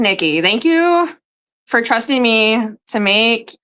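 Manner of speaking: very slow, drawn-out, word-by-word reading aloud. Reading a thank-you note aloud, talking very slow. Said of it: "why am I talking so slow right now".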